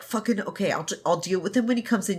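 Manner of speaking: put-on terrified voice. Retelling what Xiao Xingqian says as someone kicks the door: imitating terrified Xiao Xingqian. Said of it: "she's terrified".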